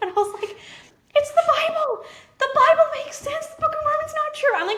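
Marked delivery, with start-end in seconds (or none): 1.1-4.5 shrill, very high, loud screaming outburst. Retelling telling a spouse through the bathroom door, imitating own past scream. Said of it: "screaming it".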